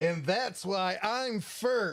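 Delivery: high, slow, smug voice. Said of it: "open the door and be like".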